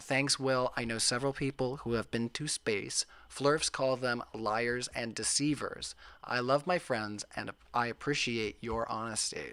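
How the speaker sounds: usual speaking voice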